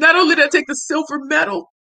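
high, tearful voice on the verge of crying. Telling listeners about an award email, on the verge of tears. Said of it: "I'm about to cry".

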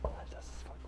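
soft, hushed whisper.

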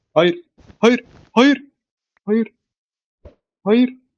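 high, frightened, panicky, repeated panicked words. Speaker reacting to a scare during play, panicked and scared. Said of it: "Oğlum çok korktum lan".

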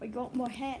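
booming, full-volume British accent. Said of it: "I don't know why I said that in a British accent".

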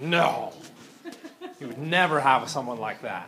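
slow, dry, ironic sarcastic aside. Speaker working through a chemical equation jokes about bad instructors: sarcastic. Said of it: "i wonder if this kind of sarcasm makes it into the".

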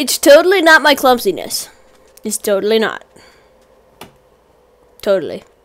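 very sarcastic with a heavy, swooping tone. Denying that sheep died through own clumsiness, very sarcastic. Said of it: "Hashtag being very sarcastic".

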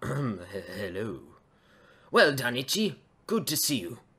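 dashing-sounding voice. Character whose voice just dropped and broke greets itchy, dashing voice. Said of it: "I sound rather dashing now".

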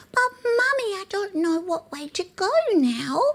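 very high, tiny little rabbit voice. A parent recalling nightly character voices for a daughter: little rabbit voice. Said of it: "the little rabbit said".

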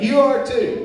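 high, loud, excited exclamation.

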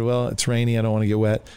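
ordinary delivery

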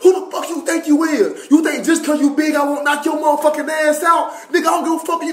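loud, hard, profane yelling tirade. Retelling a man yelling at a much taller man, retelling a yell.

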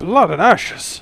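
sudden loud exclamation. In a tabletop game, a character recognizes a mangled body, loud exclamation. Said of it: "He'll exclaim and quite loud a voice".

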